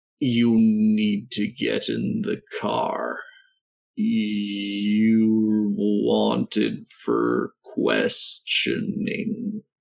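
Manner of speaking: very slow, deliberate, drawn out, "you're" stretched. Billy, overheard in the scene, speaks in a really slow tone. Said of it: "now in a really, really slow tone".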